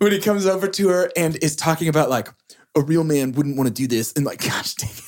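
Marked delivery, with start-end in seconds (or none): 2.8-4.1 put-on surfer-dude voice. Quoting a movie character's pickup line, sounding like Keanu Reeves. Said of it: "it's just all Keanu".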